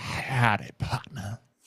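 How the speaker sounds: dark, hushed, breathy caped-hero voice. Introduced on a podcast, a guest greets the host in a Dawson impression. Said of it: "a little bit more Batman than it was Dawson".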